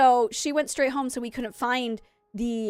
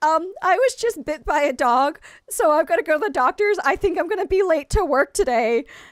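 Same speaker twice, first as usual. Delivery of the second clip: high, tearful voice, just holding off crying; 5 semitones higher, 4 dB louder than usual. Retelling calling the head teacher after a dog bite in a new job: retelling holding back tears. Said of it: "I'm trying my best not to cry".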